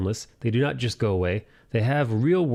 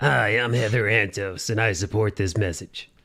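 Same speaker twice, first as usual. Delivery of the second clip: slower, put-on woman's voice; 2 semitones lower than usual. Quoting a former comics editor's comment, the speaker does a Heather Antos impression. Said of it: "That's what I imagine she sounds like".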